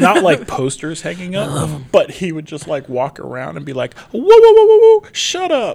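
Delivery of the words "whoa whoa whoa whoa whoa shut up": very high, very loud, swooping, over-the-top holler. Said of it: "Like [name] voice".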